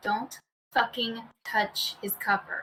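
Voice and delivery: whispering. Whispering in a player's ear while giving guidance: whispering in character. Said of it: "I'll whisper in his ear".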